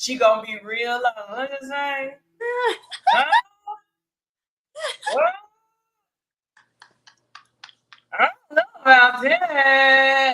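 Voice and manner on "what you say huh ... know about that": through the teeth, mouth barely open, "that" drawn out. Describing how Candy talks, quoting her: Candy talking through her teeth. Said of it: "She ain't opening up her mouth".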